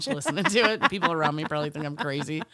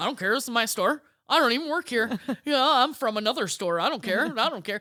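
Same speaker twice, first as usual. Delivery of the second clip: play-acted, full-on sassy, cheeky delivery; 8 semitones higher than usual. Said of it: "super sassy to the lady".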